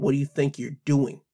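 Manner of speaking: ordinary talk, nothing marked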